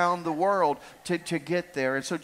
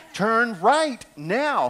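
acted sat-nav voice, a little fed up; 4 semitones higher, 4 dB louder than usual. A speaker retells the voice of the navigation box: imitating a frustrated GPS. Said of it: "she gets a little frustrated with you".

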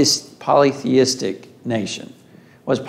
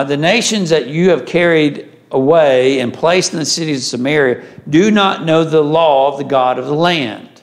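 plain

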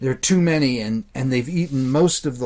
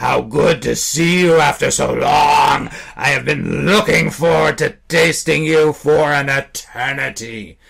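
hoarse, raspy, rasping creature voice; 5 dB louder than usual. Reading a story aloud, voicing the beaked creature: raspy creature voice. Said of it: "the thing rasped".

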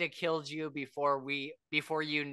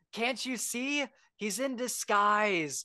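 high, drawn-out stage whisper; 7 semitones higher than usual. Narrator reading a character's line to everyone gathered around, drawn-out stage whisper. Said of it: "in this drawn out stage whisper".

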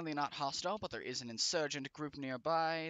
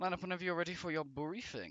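posh, fancy, put-on British accent; 2 semitones higher than usual. Addressing the gentlemen before their briefing, in a fancy british accent. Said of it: "a fancy British accent".

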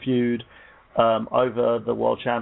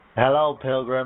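put-on American accent. Asked to do an American accent by talking like John Wayne, give a John Wayne impression. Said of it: "Just do John Wayne".

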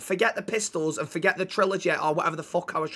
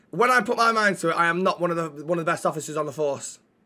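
plain

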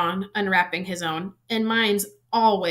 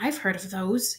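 hushed, softly spoken voice; 5 dB quieter than usual. Ron gasps as Harry unwraps the silvery gift, speaking in a hushed voice. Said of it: "he said in a hushed voice".

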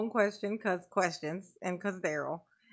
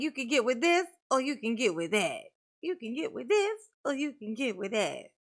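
mocking, boastful show-off man's voice; 2 semitones higher than usual. Mocking Daryl in court: imitating Daryl. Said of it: "And Daryl's like".

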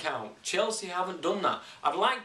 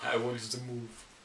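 heavy, laid-on put-on Brazilian accent; 4 semitones lower, 5 dB quieter than usual. Two speakers discuss transfer rumours, quoting a player who wants to move; put-on Brazilian accent as Hulk. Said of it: "It's a Brazilian accent".

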